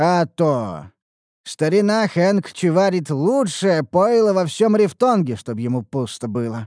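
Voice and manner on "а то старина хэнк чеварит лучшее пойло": usual speaking voice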